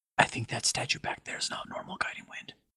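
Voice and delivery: rushed, quick, hushed whisper. A player's character steps casually over to Guiding Wind; whispering. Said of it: "and I will whisper".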